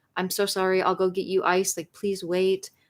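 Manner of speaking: put-on tearful, pleading voice. Retelling apologizing to a woman after hitting her: imitating own crying apology. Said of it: "I was crying. I was a crying mess".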